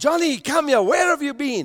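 rushed, high-pitched motherly shouting voice. Telling a story, the speaker acts out a mother calling her son johnny: imitating a mother shouting. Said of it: "she shouted and she calls him".

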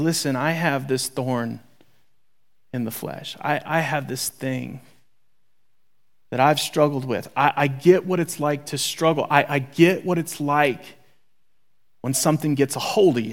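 put-on really exposed, humbled, vulnerable, open tone. Retelling an apostle's confession of struggle: imitating a vulnerable confession. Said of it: "he gets really, really, really vulnerable".

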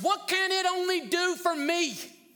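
put-on high shout, called out loudly. Acting out a fool looking at the cross: imitating someone shouting. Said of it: "looks at the cross and shouts".

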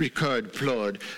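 mock French-accented delivery. Speaker announces trying his best french impersonation: french accent impression. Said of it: "try my best French impersonation".

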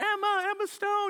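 play-acted, very high, excited yell. Retelling calling out to a woman, trying to get her to wave, retelling a yell. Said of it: "so I'm yelling".

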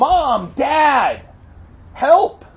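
put-on child voice, loud, high-pitched yelling.

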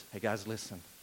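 voice dropped way down, very low and hushed. Picturing a scripture scene where the disciples are addressed: a little lower voice. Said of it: "a little bit lower voice".

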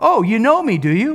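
sarcastic, mocking delivery. Acting out Jesus's words in verse 28 in a put-on sarcastic tone. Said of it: "A little sarcasm".

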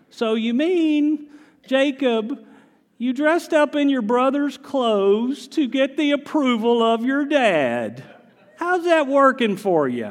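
very high pitch, leaning long on the word dad. Imagining a talk show host questioning Jacob: Doctor Phil impression. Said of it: "That's my best Doctor Phil I got".

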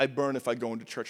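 obviously fake, put-on Russian accent. Retelling a kid at a youth camp: imitating a fake Russian accent. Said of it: "He was putting on a fake Russian accent".

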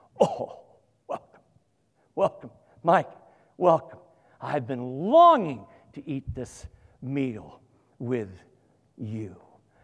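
loud, passionate calling voice.

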